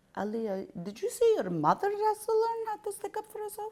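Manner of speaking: very high-pitched voice sounding far off. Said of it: "My mother was cooking and she goes".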